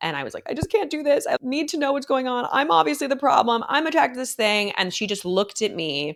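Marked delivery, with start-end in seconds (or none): 0.5-4.7 high, crying voice, speaking through tears. Retelling a first therapy visit after a heartbreak: retelling own crying plea.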